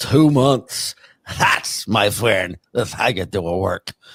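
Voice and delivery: put-on smug, lisping voice. Mocking a guest who called his act a work: smug Anthony Cumia impression with a lisp. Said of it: "you got the Carl lisp".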